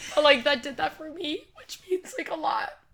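very high-pitched crying speech through tears. Speaking to someone they call one of their first friends, crying while speaking. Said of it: "I'm crying".

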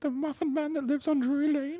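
tiny, very high-pitched, soft, squeaky voice. Asked by the others for their best Gingy, answering in Gingy voice. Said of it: "give me your best Gingy".

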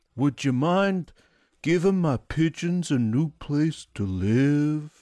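put-on high old-man voice, live drawn out. Describing an old man character who asks Peter a favor: Howard old man voice. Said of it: "an old man who talks like this".

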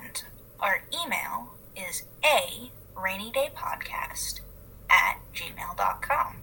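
really slow, unhurried, deliberate, drawn-out delivery. A podcast host reading out the show's contact plugs, talking really slowly. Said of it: "i don't know why i'm talking really slowly".

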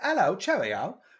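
put-on English accent. Recalling the accent the ad makers loved, demonstrating an English accent. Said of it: "They loved the English accent".

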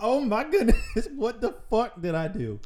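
high, loud, panicked laughing voice.

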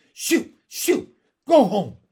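very loud, shrill, full-volume cry. A narrator reads Miss Lark shooing away a dog, crying out. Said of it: "she cried".

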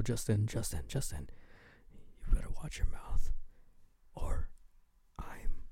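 intimate close whisper, right at the ear. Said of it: "you whisper in somebody's ear really closely".

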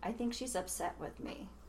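put-on hushed, very quiet, bone-dry deadpan. Retelling what a man she was whopping said, looking up at her, imitating a deadpan remark. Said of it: "just deadpan".

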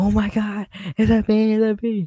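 shrill, very high, loud, drawn-out screaming. Retelling how a girl in line reacted, imitating a girl screaming. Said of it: "she starts screaming".

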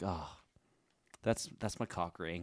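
play-acted slow, heartfelt, fond sentimental tone. Acting out showing off a keepsake to a visitor: mock sentimental tone. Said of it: "you just say it so sentimentally".

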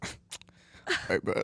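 whispered, breathy voice. Saying the other speaker is easy to imitate, an impression of them. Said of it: "I think you're really easy to do impressions of. Like, if I had your voice, it would just be that much better. I feel like all I got to do is go".

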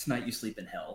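ordinary talk

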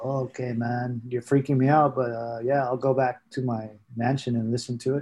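ordinary talk, nothing marked

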